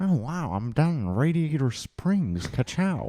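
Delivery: put-on laid-back drawl. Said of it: "he sounded like Owen Wilson".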